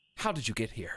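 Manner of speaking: words pushed out as a hiss. Narrator voices your character asking a woman how she got here, hissing. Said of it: "You hiss".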